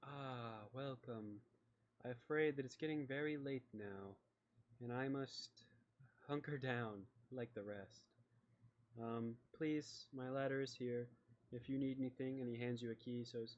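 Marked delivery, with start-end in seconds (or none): 0.0-12.4 slight, gaunt man's voice. Voicing a slight, gaunt man welcoming the party: voicing a slight, gaunt man. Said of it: "there's a very slight man. He's very gaunt, and he looks at you and he goes".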